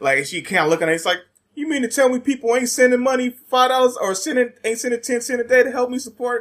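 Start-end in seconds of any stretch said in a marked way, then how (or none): 1.5-6.4 put-on high little kid voice. Retelling a funny meme, imitating the kid in it: imitating a meme kid.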